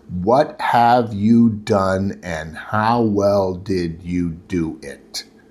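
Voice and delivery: very slow, drawn-out, word-by-word deliberate emphasis. A speaker spells out the question to the audience, very slow. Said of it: "I'm going to say it very slowly".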